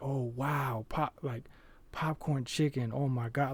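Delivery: put-on amazed, grateful woman's voice, surprised delight. Retelling how a woman reacted on opening a bag of food: imitating a surprised, grateful woman. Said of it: "you could hear in her voice the way she was like".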